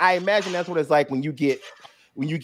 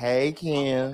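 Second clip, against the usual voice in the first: sassy feminine monster voice, quieter; 4 dB quieter than usual. Imagining a monster in the yard talking: feminine and sassy Wendigo voice. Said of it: "feminine and sassy".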